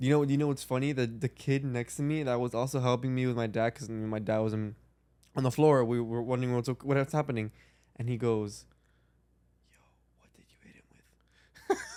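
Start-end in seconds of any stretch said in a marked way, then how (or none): 9.7-11.8 low, very hushed, barely voiced whisper. Retelling what the kid next to him asked: imitating someone whispering. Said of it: "that's why he whispered it".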